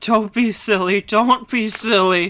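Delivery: voice imitating an engine dying. Talking about a reading they like, doing a dying Henry voice. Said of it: "like dying Henry voice".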